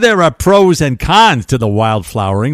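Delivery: put-on New York accent. Introducing a new dating trend, joking aside: put-on New York accent. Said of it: "They don't say it with a New York accent, but I do".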